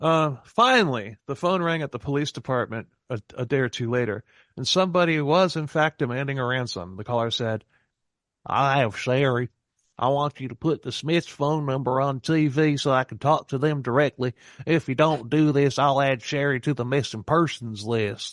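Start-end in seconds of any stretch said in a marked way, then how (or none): 8.4-18.3 put-on South Carolina accent. Retelling a ransom caller's demand: imitating a South Carolina accent. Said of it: "he's from South Carolina".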